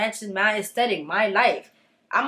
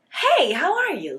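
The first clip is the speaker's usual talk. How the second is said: overdone, overly fake, swooping friendly tone; 2 semitones higher than usual. Demonstrating how to greet people at an audition, overly fake friendliness. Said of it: "don't be that fake".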